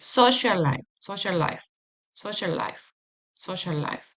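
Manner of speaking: "social life" said fast, run together, repeated. Showing learners how to link two words: saying social life very fast. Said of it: "very fast".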